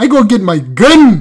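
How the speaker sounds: put-on funny, odd Canadian accent. Imitating someone's line from a clip: imitating a canadian accent. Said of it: "The accent is crazy".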